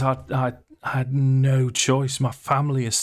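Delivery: high, forlorn, pleading voice. Retelling what a character said when confronted: acting out forlorn. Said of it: "So he looks properly forlorn".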